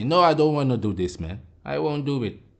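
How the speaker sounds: usual speaking voice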